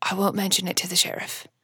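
muttering under breath. A role-play character saying goodbye to another: muttered under breath. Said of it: "under my breath, I say".

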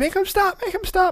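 play-acted very high, panicked, frantic screaming shriek. Retelling freaking out and reaching his dad, retelling a scream. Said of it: "And I'm just screaming".

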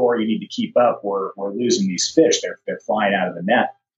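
plain

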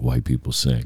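deep, toneless, dead-level monotone drone. Retelling what Shaq said after a bear hug: Shaq monotone voice. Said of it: "he talks in that monotone voice".

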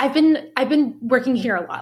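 mock prickly, guarded, defensive, snippy tone. Retelling a coworker's answer to a friendly question: imitating a defensive, snippy reply. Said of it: "she got really defensive and, like, snippy".

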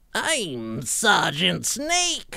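high, swooping cartoon villain voice. Trying a video game character, the speaker ends up sounding like Cobra Commander. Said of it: "that's more like Cobra Commander".

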